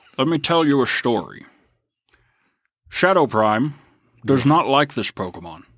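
put-on Scottish accent, film-star style. Answering a listener's request to say a Pokemon name: Sean Connery accent. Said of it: "say Bruxish with a Sean Connery accent".

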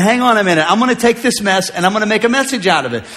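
ordinary talk, nothing marked

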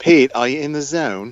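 put-on British accent. Talking about Harry Potter, the speaker asks Pete a question in a fake British accent. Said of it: "I thought I should put on me British accent".

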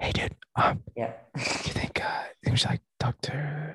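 put-on whisper. Retelling a past remark whispered to another person: imitating own whisper. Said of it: "whispered to Kenan".

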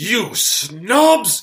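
shrill, very loud, high-pitched furious yell, snobs drawn out. Retelling how a TV character acts when he gets mad: imitating an angry Basil Fawlty. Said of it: "when he gets mad, he's like".

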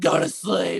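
loud, full scream.

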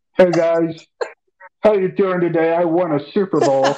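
high, frog-like puppet voice. Joke around about a great quarterback's voice by speaking as him in a Kermit the Frog voice. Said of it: "his voice reminds me of, is Kermit the Frog".

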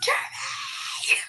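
drawn-out mock yell.

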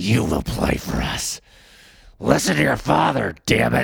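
slow, roughened gruff delivery. Doing an impression on request after praise: Vince McMahon impression. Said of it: "your Vince McMahon".

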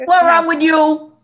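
put-on high, loud, scolding Bajan accent. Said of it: "can you whip out a Bajan accent?".

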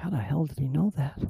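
mock scrambled, startled, caught-off-guard blurt. Retelling how people caught lying react: imitating a startled jump in voice. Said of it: "and the jump in their voice of".

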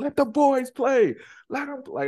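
play-acted very high-pitched yelling. Speaker recalls screaming at the TV during a game: retelling yelling at the TV. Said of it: "like I'm just like yelling".

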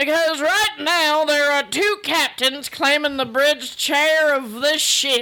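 put-on country accent voice. A red-shirt crewman, asked why it will be rough, answers in a country crewman voice. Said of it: "He's from the countryside of the planet".

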